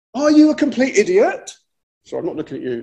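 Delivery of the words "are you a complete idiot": put-on, high-pitched, exasperated tone. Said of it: "it's more like this".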